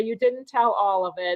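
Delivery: ordinary delivery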